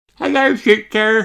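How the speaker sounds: very high, squeaky, tiny little voice. Reading a Peppa Pig story, young Daddy Pig says hello on a videotape. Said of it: "What a squeaky little voice you have".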